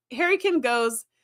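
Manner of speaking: usual speaking voice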